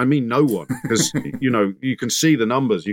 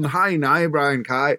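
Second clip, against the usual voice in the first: put-on Northern Irish accent, spoken slower; 4 semitones higher than usual. Retelling how an actor mate rang in, imitating Luke's Northern Irish accent. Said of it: "he decided to do it in a Northern Irish accent".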